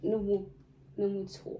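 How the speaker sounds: very quiet, tearful crying with voice cracking. Asked why you're crying, answer while crying, voice breaking. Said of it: "왜 울어?".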